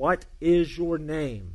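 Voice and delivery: loud, very slow, commanding, acted voice. Retelling a question put to a soldier for the third time, louder. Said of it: "and more loudly".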